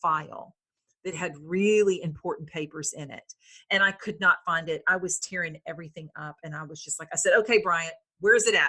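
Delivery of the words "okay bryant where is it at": put-on fed-up, exasperated, frustrated tone. Retelling calling out while searching for a lost file: retelling own frustrated words. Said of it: "just out of frustration".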